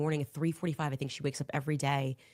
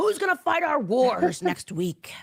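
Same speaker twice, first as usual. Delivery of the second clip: mock ranting, screaming voice, higher and louder; 9 semitones higher, 7 dB louder than usual. Mocking how Tim Pool would rant and scream: imitating Tim Pool ranting and screaming. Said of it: "Let Tim Pool rant and scream and say".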